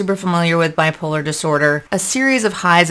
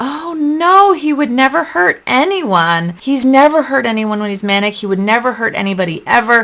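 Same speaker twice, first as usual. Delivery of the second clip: mock dismissive, insistent, pitched-up voice; 6 semitones higher than usual. Retelling the mother's answer to a police officer, mimicking her insisting. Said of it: "my mother starts going on".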